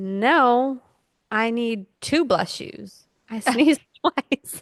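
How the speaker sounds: cheeky, sassy high voice, drawn-out "no". Retelling what a toddler said after sneezing twice: imitating Lainey being sassy. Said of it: "kind of being sassy".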